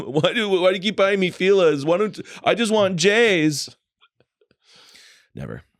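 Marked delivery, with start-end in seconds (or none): 0.0-3.7 put-on high, weepy crying child voice, J's drawn out. Retelling coming home as a kid and complaining to mom: imitating own childhood crying. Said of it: "to my come home crying".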